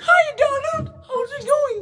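put-on cartoon duck voice, very high. Asked by another speaker to talk in his voice, a put-on cartoon voice. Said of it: "talk in his voice, go".

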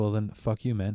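ordinary talk, nothing marked

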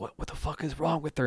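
soft, hushed half-whisper under the breath. Recapping a scene where Chiana asks about her, half-whispering as Chiana. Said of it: "Chiana is just like whispering like".

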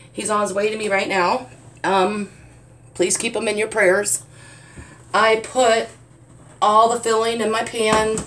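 anxious, nervous, on-edge voice. Filling her pan while asking for prayers for someone on his way: nervous. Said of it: "Sorry, I'm a nervous wreck".

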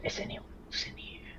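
very quiet, hushed whisper, barely voiced. Player's character leans close to a man, copying what he does: whispering. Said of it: "just kind of whisper".

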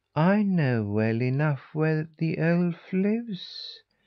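mild, gentle delivery. A cat answers about where the elf lives, in a soft voice. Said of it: "he said in a soft voice".

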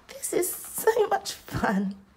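very high, laughing and giggling through the words. Narrator reading a character's line as they all make stars, giggling. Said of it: "giggled Luna".

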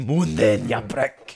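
intimidating deep Scottish accent. Showing how intimidating a Scottish accent sounds: deep intimidating Scottish accent. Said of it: "when you put it in a deep voice".

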